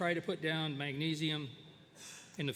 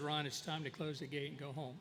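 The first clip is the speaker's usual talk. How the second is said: plain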